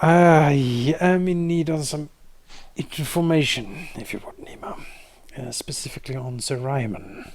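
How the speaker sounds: barely held-back anger, strained control, drawn-out "I". Voicing a character who is visibly trying to control his temper: barely controlled anger. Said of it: "visibly trying to control his temper".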